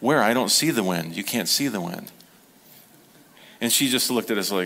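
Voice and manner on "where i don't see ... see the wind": acted-out sarcastic, sarcasm-laced tone. Retelling a reply to Mom about the wind: imitating own sarcastic remark. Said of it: "sarcastically said".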